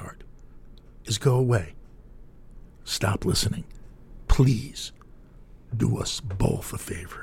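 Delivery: very calm, composed voice. Radio host telling a listener to stop listening; very calm voice. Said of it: "in a very calm voice".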